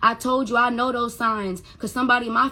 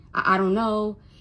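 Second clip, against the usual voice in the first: imitated stuttering, stammered speech. Retelling telling a friend on the phone what was said: imitating own past stuttering. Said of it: "I stutter and shit".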